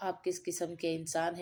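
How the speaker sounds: usual speaking voice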